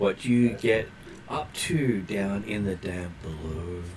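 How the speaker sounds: soft, hushed, disembodied half-whisper. A game master voicing a mysterious voice the players hear, half-whispering voice. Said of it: "you hear a voice whisper".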